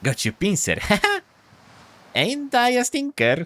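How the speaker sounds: very high, squeaky, swooping little crab voice. A game master voicing a crab to a player, squeaky annoying crab voice. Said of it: "A sound that turns into a squeaky voice".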